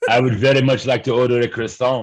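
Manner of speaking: loud, suggestive, fake French accent. Joking that everything said in a French accent sounds dirtier: French accent. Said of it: "everything that's said with a French accent sounds so much dirtier".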